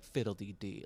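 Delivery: put-on scornful delivery. Imitating a film character's first line: imitating a disdainful tone. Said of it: "the way she says it with such, like, disdain".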